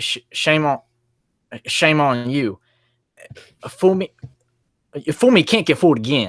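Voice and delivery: high, stumbling put-on voice. Retelling a famous flubbed saying: George W. Bush impression. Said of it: "and he goes".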